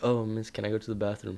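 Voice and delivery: hushed, soft, low, quiet little voice. Telling about a classmate the teacher couldn't hear, imitating his quiet voice. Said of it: "speaking in such a low voice".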